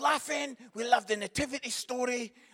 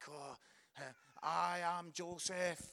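put-on halting, very slow, nervous kid stammer; 5 semitones lower, 12 dB quieter than usual. Retelling a nativity play, voicing the boy playing Joseph: imitating a nervous child. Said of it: "Joseph's a bit nervous".

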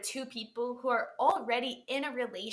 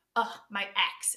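negative, disapproving delivery; 3 semitones lower than usual. Explaining that meaning depends on tone, saying it the negative way: negative tone. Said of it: "it can be used in a negative way, like".

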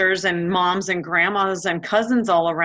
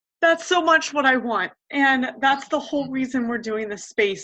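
tearful, high, choking up, voice breaking; 6 semitones higher than usual. Speaking to listeners who can't see the speaker, choking up, crying. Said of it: "I was trying not to cry, but it's not working".

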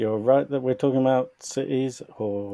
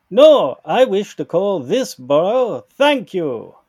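terrible fake French accent, higher and louder; 7 semitones higher, 10 dB louder than usual. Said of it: "we're doing the worst possible French accents".

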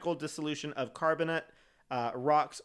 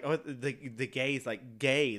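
normal talking voice

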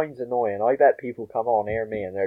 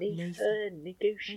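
put-on Bristol comedian voice, higher and quieter; 8 semitones higher, 11 dB quieter than usual. Repeating the line after the others praise it, Russell Howard impression. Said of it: "a very good impression of Russell Howard".

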